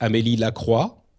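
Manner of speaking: name pronounced with French pronunciation. Introducing a French character's name from the lore, French pronunciation of the name. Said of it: "I hope you enjoy the French pronunciation".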